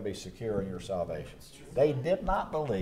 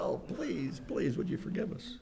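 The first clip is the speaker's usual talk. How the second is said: play-acted, hushed, breathy whispered pleading; 9 semitones higher, 5 dB quieter than usual. Explaining a Bible passage, voicing the brothers before Joseph, acting out begging for life. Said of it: "it's like begging for their life".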